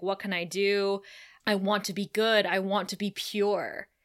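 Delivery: put-on tearful voice. Retelling a scene where Drusilla cries: imitating Drusilla crying. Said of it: "She's crying".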